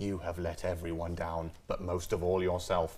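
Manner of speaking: very low, quiet, hushed angry voice. Recalling being scolded at school, speaker mimics teachers: mimicking teacher's angry quiet voice. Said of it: "But when they do the quiet voice".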